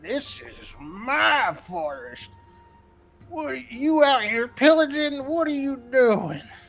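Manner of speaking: put-on angry old man shouting. Voicing an old man in the forest: old man yelling. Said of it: "old man yelling at people".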